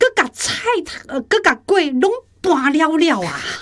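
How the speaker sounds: high-pitched, angry scolding tone. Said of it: "阿秋很生气哦".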